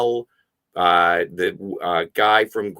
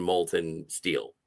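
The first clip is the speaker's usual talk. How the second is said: normal talking voice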